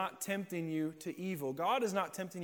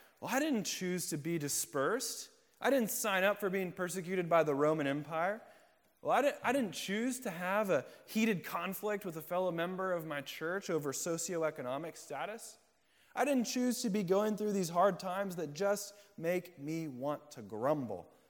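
plain

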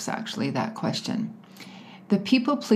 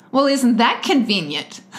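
put-on high, loud, snarky twenty-year-old voice. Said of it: "in my snarky twenty-year-old voice".

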